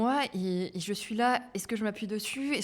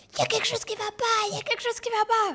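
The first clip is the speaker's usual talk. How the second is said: put-on very high, strained alarm through pain, urgent; 12 semitones higher, 4 dB louder than usual. Retelling what she told someone while in labor: reenacting talking mid-contraction. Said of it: "Faut imaginer que j'ai vraiment la contraction et je dis ça en même temps".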